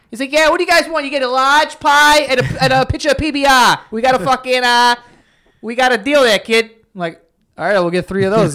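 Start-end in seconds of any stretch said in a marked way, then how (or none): 0.3-6.7 put-on heavy Boston accent, laid on thick, pitched up. Retelling how the bartender answered the group, in the thickest Boston accent. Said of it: "the thickest Boston accent in the world".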